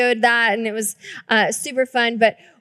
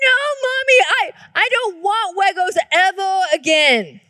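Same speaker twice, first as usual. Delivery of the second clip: put-on child sobbing and screaming, much higher pitch; 6 semitones higher than usual. A mother acts out her four-year-old son's words: imitating a crying, screaming child. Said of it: "commenced crying his eyes out and screaming".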